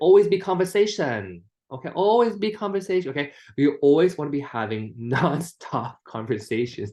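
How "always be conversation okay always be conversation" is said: put-on Chinese accent, pitched high. Speaker repeats a slogan so it sticks with listeners, in a put-on Chinese accent. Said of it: "let's do the Chinese way".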